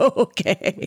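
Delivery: laughing while speaking, pitched high.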